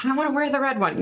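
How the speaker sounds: put-on high yell, loud. Act out a daughter calling from her room to her mom down the hall, imitating her screaming. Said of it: "Brittany screaming from her room to her mom".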